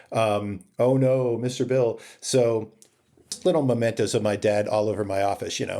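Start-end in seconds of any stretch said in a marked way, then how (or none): 0.7-2.0 squeaking, cartoon-like voice. Remembering how the dad would do the voice; Mister Bill voice. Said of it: "He would do the voice".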